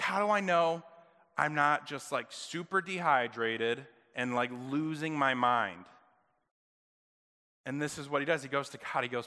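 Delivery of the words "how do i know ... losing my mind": normal talking voice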